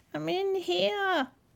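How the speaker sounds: very high cry, smothered and muffled. Reading a fairy tale: the grandmother calls out from inside the wolf, in a muffled voice. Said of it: "cried a muffled voice from inside the wolf".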